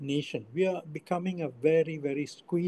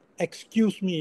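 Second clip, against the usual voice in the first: very stern, rebuking tone of voice; 3 semitones higher, 4 dB louder than usual. Retelling telling off girls who didn't give way to an older man, retelling a very stern voice. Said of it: "in a very stern voice".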